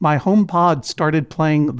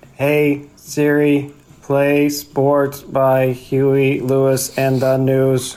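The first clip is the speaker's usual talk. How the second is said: slow put-on robot voice; 3 semitones lower than usual. A recording of [name], who was asked to do a robot voice: robot voice. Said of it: "do the robot voice for us".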